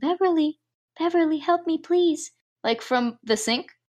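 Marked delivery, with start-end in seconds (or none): 0.0-2.3 small, high little voice calling out. Recapping a movie, the speaker voices a voice from the sink, little voice calling out. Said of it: "there's this little voice calling".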